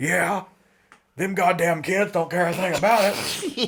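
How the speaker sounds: put-on old man cussing loudly. Retelling an old man's rant about pizza places, imitating him cussing loudly. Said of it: "the guy cussed real loud".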